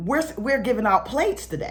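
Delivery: ordinary talk, nothing marked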